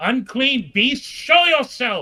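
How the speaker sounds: high-pitched, loud, slow call carried out into space. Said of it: "and I'll call out".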